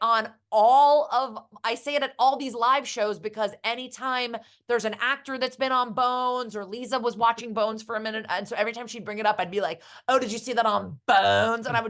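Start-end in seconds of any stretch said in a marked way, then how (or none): 10.1-11.7 put-on joking announcer voice. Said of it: "say it like you".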